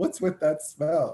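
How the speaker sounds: upset, high, slow yell.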